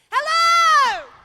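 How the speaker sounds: very loud, very high-pitched shout. Greeting a crowd after saying so beforehand: shouting hello. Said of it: "So I'm gonna shout hello".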